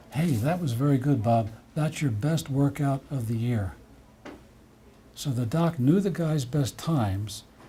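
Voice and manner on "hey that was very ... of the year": ordinary talk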